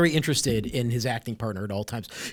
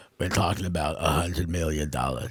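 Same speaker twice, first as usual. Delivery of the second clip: deep, slurred mumble with consonants half dropped; 11 semitones lower, 4 dB quieter than usual. Imitate how he answers when they ask what they're talking about, in a mumbled Toretto voice, consonants swallowed. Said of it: "there are like three consonants maybe... He's pronouncing like two and a half of them".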